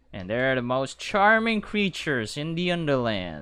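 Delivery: fake-sincere, sarcastic, swooping sing-song. Describing the fireflies from a book while drawing them: sarcastic tone. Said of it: "notice the sarcasm in my voice".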